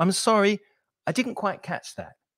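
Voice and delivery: gently courteous, polite intonation. Showing learners how to ask an examiner to repeat, with polite intonation. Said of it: "make sure that you're using polite intonation".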